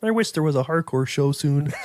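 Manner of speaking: mopey, forlorn, sad, lonely frog puppet voice. Complaining of having nothing until April; Kermit the Frog voice. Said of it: "break out my Kermit the Frog impersonation".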